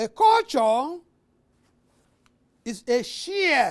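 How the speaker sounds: shared stressed, drawn out slow and wide.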